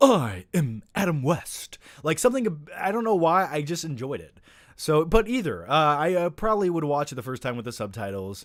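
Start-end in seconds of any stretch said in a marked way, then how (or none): 0.0-1.8 very slow, drawn-out, swooping, each word weighed. Showing how a dubbed character sounded: Adam West voice. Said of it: "main character's voice sounded like Adam West".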